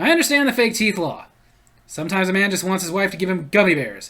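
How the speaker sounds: usual speaking voice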